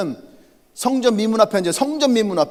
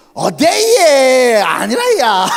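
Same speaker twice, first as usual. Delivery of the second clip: loud, put-on Gyeongsang accent; 3 semitones higher, 7 dB louder than usual. Retelling an exchange and imitating the reply in a Gyeongsang dialect accent. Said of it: "제가 왜 이 흉내를 냈냐 하면, ... 우리말로 하면 경상도".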